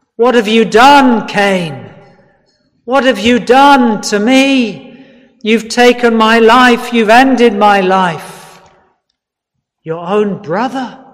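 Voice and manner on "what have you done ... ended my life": acted shouted accusing cry, higher. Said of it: "Abel's blood shouts out".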